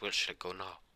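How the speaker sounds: plain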